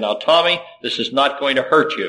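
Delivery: ordinary talk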